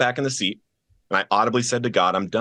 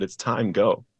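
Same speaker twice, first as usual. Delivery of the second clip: gentle, still, quiet soft voice. Retelling how he repeated himself once the speaker calmed down in the car, imitating a still, soft voice. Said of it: "in that still soft voice".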